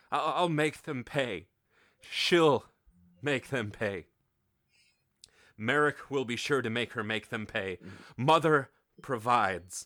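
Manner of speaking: faltering, stumbling, halting, tripping over each phrase. Voicing a grieving character swearing revenge: stumbling over words. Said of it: "he's stumbling through his words".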